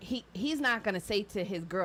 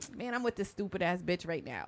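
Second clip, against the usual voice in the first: mock talking-down, disrespectful, scornful tone; 3 dB quieter than usual. Showing how a boyfriend must not talk about his girlfriend: imitating a disrespectful boyfriend. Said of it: "You can't say it disrespectfully".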